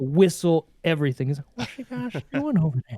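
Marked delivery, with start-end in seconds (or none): 1.6-3.0 high-pitched, creepy voice. Imitating a brother's Herbert the pervert impression. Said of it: "perfectly, is Herbert the pervert".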